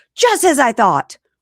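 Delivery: high, shrieking, very loud scream. Retelling how a priest talking to spirits cries out: imitating the priest screaming. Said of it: "he screams out".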